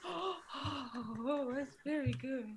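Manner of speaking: very slow, drawn out, awed starstruck fanboy gushing. Voicing an amazed audience member after a performance: acting starstruck fan. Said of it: "That is fanboying".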